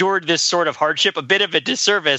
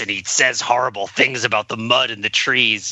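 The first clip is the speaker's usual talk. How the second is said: put-on veteran voice, lower and faster; 6 semitones lower than usual. Describing a Saturday Night Live sketch, the speaker imitates Tony: grizzled veteran voice. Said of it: "and he talks like this".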